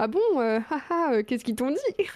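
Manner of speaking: acting innocent, playing dumb. Retelling answering their mother's call about the university: retelling feigned innocence. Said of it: "j'étais en mode ah".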